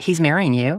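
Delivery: ordinary delivery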